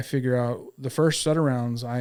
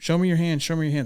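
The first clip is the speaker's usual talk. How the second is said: put-on barked, repeated, forceful police-style shouting; 4 semitones higher, 3 dB louder than usual. Retelling officers challenging the speaker hidden in a bush, imitating officers screaming. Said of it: "too busy screaming at me".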